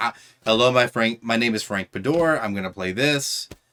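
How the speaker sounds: normal talking voice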